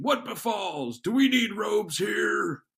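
very high, very loud, authoritative commanding shout. A narrator voices the arriving city watch patrol during a brawl, authoritative voice. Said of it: "what sounds like an authoritative voice saying".

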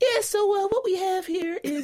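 voice jumping suddenly up to very high pitch. Retelling how Will came on to take the fourth block: imitating Will's very high voice. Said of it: "This man's voice got 7 octaves higher".

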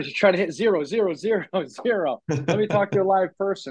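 repeated high yell. Retelling a call to a credit card company's automated line, yelling at the phone. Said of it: "I'm literally yelling at the phone".

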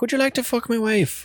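put-on Irish accent, very high-pitched. Describing how hospitable the irish were, doing an irish accent. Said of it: "The Irish are like".

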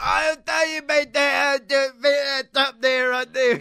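exaggerated Cockney accent. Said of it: "violently over Cockney".

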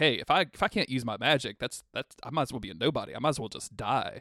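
usual speaking voice

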